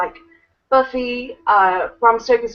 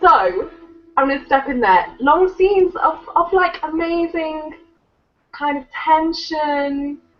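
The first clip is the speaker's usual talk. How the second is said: cross, irritated-sounding, pitched-up tone; 6 semitones higher than usual. Joining a discussion of a film, the speaker sounds angry. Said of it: "I sound so angry right now".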